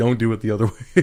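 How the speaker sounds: put-on stern, severe voice. Retelling how Matt Hardy addressed the crowd: imitating Matt Hardy sternly. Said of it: "Matt Hardy sternly".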